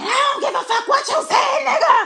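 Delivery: very loud, high, shrill screaming rant. Retelling hearing a neighbor through her apartment door: imitating a neighbor screaming. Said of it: "she would just be screaming".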